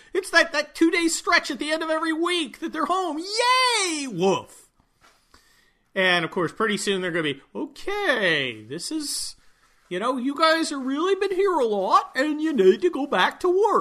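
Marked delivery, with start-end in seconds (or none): 7.6-13.9 sing-song cartoon bear voice, swooping, drawn-out "okay". Voicing the dogs telling people to go back to work: Boo Boo voice. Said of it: "that Yosemite Bear inflection".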